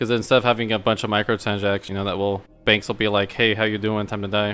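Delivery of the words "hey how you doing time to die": usual speaking voice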